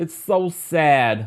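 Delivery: put-on high New Jersey accent, sad, stretched long. Quoting Teresa's words to E! News: put-on Jersey accent. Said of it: "I gotta put my Jersey accent on".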